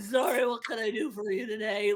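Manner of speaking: put-on sick-sounding voice. Showing how to improvise a random guard named Sneezy: playing a sick guard. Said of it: "they're sick".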